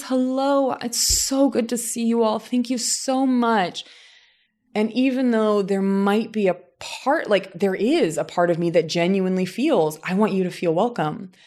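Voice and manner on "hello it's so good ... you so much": really warm, welcoming voice, pitched up. Speaker shows the voice she puts on to greet a group: warm, welcoming voice. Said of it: "put on my really warm, welcoming voice".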